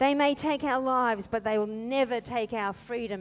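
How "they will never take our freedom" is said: ordinary talk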